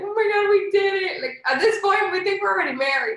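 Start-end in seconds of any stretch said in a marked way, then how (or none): 0.0-1.2 slow voice on the edge of tears. Retelling what the two of them said while still fasting, retelling almost crying. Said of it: "like almost crying".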